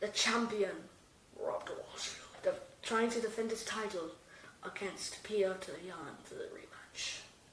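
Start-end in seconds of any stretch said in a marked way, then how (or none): 1.4-7.2 very soft, hushed nature documentary narrator whisper. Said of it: "And we're whispering".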